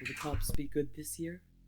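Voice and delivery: cracked talking-rock character voice. Storyteller voices a cracked rock asking the group a question, deeper voice. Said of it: "you hear in a deeper voice a question".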